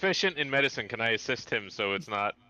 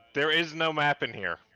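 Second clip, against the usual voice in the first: voice raised high, calling out; 5 semitones higher than usual. Calling out to others in the room in character: yelling in character. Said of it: "yelling next to, uh, Pete's ear".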